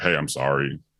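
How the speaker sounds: pleading voice. Retelling pleading in the car after a banquet: retelling own pleading. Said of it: "plead my case".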